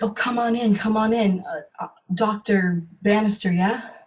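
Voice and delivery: frightened, excited, determined. Voicing a patient greeting the doctor at her door: frightened, excited, determined. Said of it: "a frightened, excited, determined energy".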